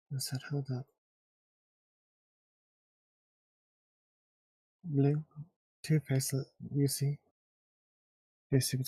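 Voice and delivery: hushed whispering. A player in a tabletop game points something out to the group: whispering. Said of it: "You're whispering".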